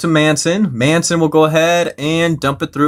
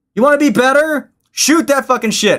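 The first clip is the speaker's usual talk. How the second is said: screaming at a very high, shrill pitch; 10 semitones higher than usual. Rooting for the Avalanche while watching, yelling at the team. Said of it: "yelling or if I'm screaming".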